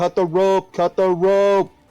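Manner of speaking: shouting. Tabletop player's character running back into the hallway, yelling. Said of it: "I'm yelling".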